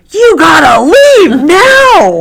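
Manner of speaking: loud, slow, shouted yelling.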